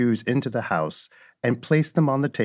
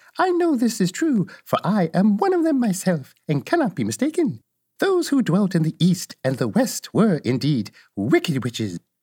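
sweet-voiced, gently raised tone; 7 semitones higher than usual. Reading a story aloud, a good witch speaks in a sweet voice. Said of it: "But the little old woman walked up to Dorothy, made a low bow, and said in a sweet voice, ... and said in a sweet voice".

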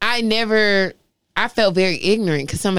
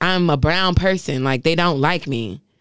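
ordinary talk, nothing marked

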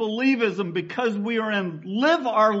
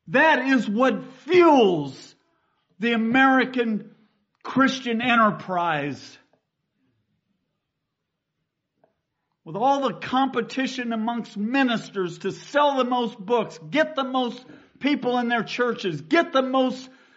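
indignant, angry preaching sermon tone. Preaching about greed and competition among ministers, sounding angry. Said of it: "if I sound angry".

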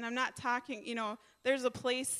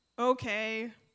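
mock rude, disrespectful "okay"; 3 dB louder than usual. Imitating kids answering a request to do the dishes: imitating kids' rude tone. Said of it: "the way that they say it".

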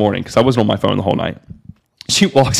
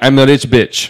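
put-on heavy, strong Russian accent, laid on thick. Quoting a woman's answer when asked what she does, strong Russian accent. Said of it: "In like a Russian accent and very strong Russian accent".

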